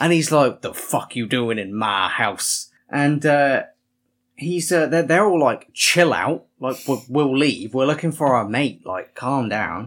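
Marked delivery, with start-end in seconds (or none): 0.6-2.7 mock-aggressive old man voice, slower. Speaker retelling an old man confronting people in his house, retelling an aggressive old man. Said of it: "he just starts getting aggressive and aggressive".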